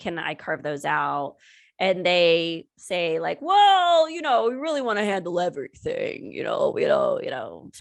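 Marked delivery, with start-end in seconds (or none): 4.1-7.7 put-on male voice with swooping pitch. Retelling what they said about screening rights, in a put-on male voice. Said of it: "I didn't mean to do a male voice for everything".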